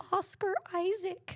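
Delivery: tiny, very high, small, unsure, timid voice. Naming a casting pick after being told to say it with confidence: small unconfident voice. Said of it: "I'm gonna say it with a little voice".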